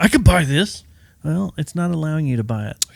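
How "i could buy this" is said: put-on, irate, angry yelling. Speaker acts out a customer yelling at the cashier: imitating a customer yelling. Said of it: "start yelling at them".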